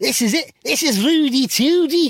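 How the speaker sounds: very high, loud, failed put-on Scouse accent. Trying out a bit and quoting a line, attempted Scouse accent. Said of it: "That's not Scouse".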